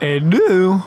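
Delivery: voice breaking and cracking mid-phrase. Commenting as Zerglings take out a Hellion: voice cracking. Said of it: "My voice just cracked for no reason".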